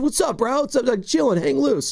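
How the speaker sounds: chill Southern California surfer-dude voice. Show Carter how he sounds to you, in a SoCal surfer voice. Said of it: "he sounded like he was from SoCal. He's a surfer, bro".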